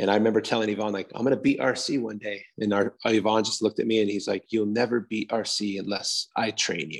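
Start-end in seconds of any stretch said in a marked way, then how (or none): 4.5-7.0 put-on Bulgarian accent, dead serious delivery. Speaker retells Yvonne's reply to him, imitating Yvonne's Bulgarian accent. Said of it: "he's in his Bulgarian accent".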